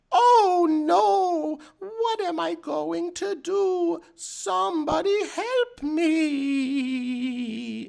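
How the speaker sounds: put-on very high, shrill, very slow old lady voice. Mocking the game's voice acting, men faking old women: man faking an old woman's voice. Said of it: "men trying to do the voices of old women".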